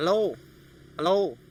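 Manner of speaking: "hel" swallowed and muffled, "lo" punched out loud. Copying how Khmer speakers pronounce hello: muffled 'hel', loud 'lo'. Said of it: "So the first sound is muffled, second sound loud".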